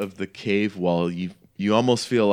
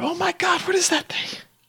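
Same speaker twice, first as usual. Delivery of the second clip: squeaky, high, hushed whisper. Acting out what the ladies whisper to each other, imitating them whispering. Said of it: "You hear them like whispering to each other".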